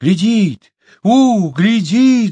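very high-pitched, loud, terrified cry. A narrator reads the Golds shrinking back from Chumboka's gaze, shouting in fear. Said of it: "закричали Гольды и в страхе шарахнулись".

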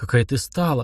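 plain

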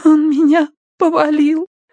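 shaky, very high, faltering, trembling babble. A girl lying on the floor answers the one asking if he hurt her, trembling babbling voice. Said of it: "пролепетала она дрожащим голосом".

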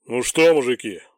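low, rumbling, deep bass voice. The division commander greets his officers, in a deep bass voice. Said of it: "пробасил комдив".

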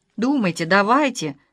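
ordinary delivery, nothing marked

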